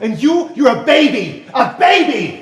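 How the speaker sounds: loud, high, drawn-out angry shout. A speaker turns on a baby and shouts at it. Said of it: "I'm shouting at a baby".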